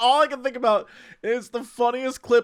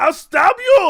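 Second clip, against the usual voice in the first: high, raised, loud villain shout; 9 semitones higher, 9 dB louder than usual. Acting out the burning enemy's lines: imitating a shout. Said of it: "He's like".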